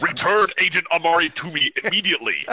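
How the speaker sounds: booming, loud, high alien voice. Storyteller voicing a loud alien voice inside a character's head. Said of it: "This loud alien voice in Harry's head".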